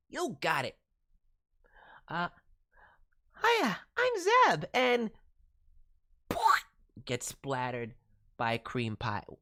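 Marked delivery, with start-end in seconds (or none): 3.4-4.6 put-on very high-pitched little kid voice. Introducing the character Zeb, in a Zeb little kid voice. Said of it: "so basically a little kid voice".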